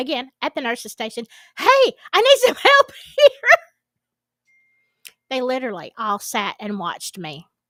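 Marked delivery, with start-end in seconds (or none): 1.6-3.5 shrill, high, very loud screamed call. Retelling calling to the staff at the nurse's station: retelling own screaming for help. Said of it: "I'm screaming to the staff".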